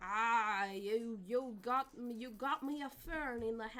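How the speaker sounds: failed Scottish accent attempt. Speaker who says they can't do accents tries one, bad Scottish accent. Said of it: "How does a Scottish accent sound like?".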